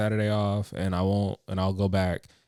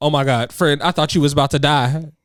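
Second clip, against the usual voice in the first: put-on panicked voice; 6 semitones higher, 9 dB louder than usual. Retelling how a friend answered when you called out stuck; imitating a panicked friend.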